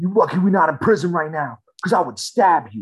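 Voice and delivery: upset, loud, high-pitched, threatening yell. Retelling a man who started yelling at them in the street; retelling a yell. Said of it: "He starts yelling at me in the streets".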